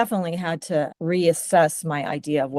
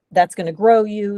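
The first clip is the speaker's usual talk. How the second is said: ordinary talk, nothing marked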